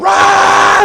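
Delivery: very high, stretched-out, drawn-out shriek. Retelling watching a player shuffle up to the line, retelling screaming at the TV. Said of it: "I'm like screaming at the TV".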